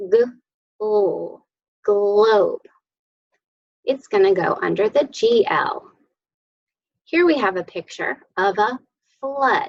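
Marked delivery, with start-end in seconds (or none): 0.0-2.6 slow, sound by sound, each sound pulled apart then blended. Sounding out a word blend for a picture on the page, the speaker: saying it slowly. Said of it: "If I say it slowly".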